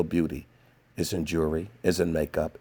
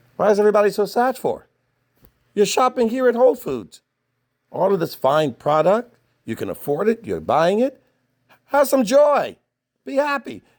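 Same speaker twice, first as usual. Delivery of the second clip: very high, loud, shrill, swooping scolding yell; 8 dB louder than usual. Retelling what gets yelled at shoppers in a store: retelling yelling at shoppers. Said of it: "just start yelling at 'em".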